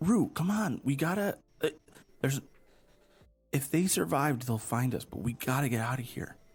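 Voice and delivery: hushed whisper. Urging the companion Rue in character to get out before soldiers come: whispering. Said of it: "you're whispering this".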